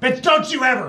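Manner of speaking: very high, very loud, shrill, furious yelling. Retelling cussing oneself out over a numb hand: imitating cussing someone out. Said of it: "I cussed myself out".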